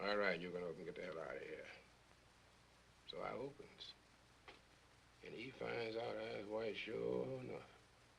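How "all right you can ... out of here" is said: soft-spoken, quiet, low-key voice. Retelling the chief sitting down again: imitating someone speaking quietly. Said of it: "quiet again".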